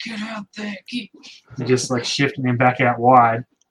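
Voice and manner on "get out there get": mock, very high-pitched, loud sideline shout. Retelling Rosenior directing a player from the sideline: imitating Rosenior shouting. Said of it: "Rosenior on the sideline going".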